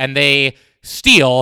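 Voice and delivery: stress on steal, drawn out slow and heavy. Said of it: "emphasis on steal".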